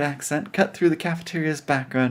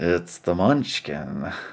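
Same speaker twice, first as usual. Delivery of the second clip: slow, drawn-out drawl; 9 semitones lower than usual. Reading a story aloud with another reader, voicing a character: drawling. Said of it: "drawled Leon".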